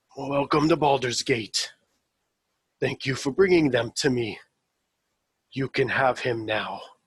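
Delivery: emotionless, distant, heavy, flat voice. Game master voices a character whose voice is not what it should be: emotionless, distant, heavy voice. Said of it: "uh, he opens his mouth to begin talking, / It's emotionless, distant, almost heavy".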